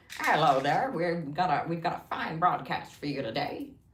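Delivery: put-on old-time broadcast announcer. Speaker demonstrates the old radio voice to the others: 1950s radio announcer voice. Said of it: "that nineteen fifties radio voice that was like".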